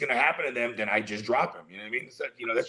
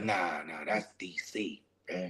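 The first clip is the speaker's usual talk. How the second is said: lower and quieter voice; 6 semitones lower, 9 dB quieter than usual. Imitating a friend from Baltimore describing being busy: his way of talking. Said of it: "He's like".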